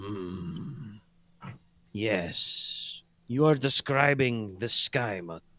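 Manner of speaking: slow, drawn-out, grinding, gravelly voice. Voicing the character who recognizes the winged woman in the mural: Six Arm's deep gravelly voice. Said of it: "in his kind of deep, gravelly voice".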